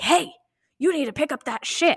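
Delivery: screamed, high-pitched, demanding yell. Retelling how a giant man yelled at a teenage boy, imitating a scream. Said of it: "Literally literally screams".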